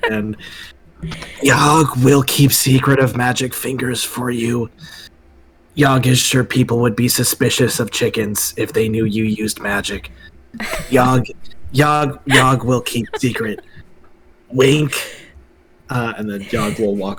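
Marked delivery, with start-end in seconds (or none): 0.1-14.9 awful whisper in a character voice. As the party leaves, Yogg whispers to Mister Finster: the worst whisper ever. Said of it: "the worst whisper you've ever heard".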